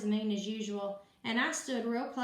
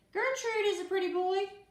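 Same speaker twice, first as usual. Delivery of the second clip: real screechy voice, very high; 9 semitones higher, 3 dB louder than usual. Reading a story aloud, voicing Gertrude: screechy voice. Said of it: "a real screechy voice said".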